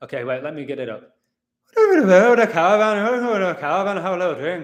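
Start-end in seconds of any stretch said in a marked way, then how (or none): 1.8-4.6 loud, high-pitched, belted delivery in an Irish brogue. Reaching for an Irish accent, the speaker attempts Brad Pitt in Snatch accent. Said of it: "Brad Pitt from Snatch".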